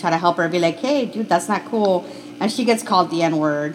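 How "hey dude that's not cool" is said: normal talking voice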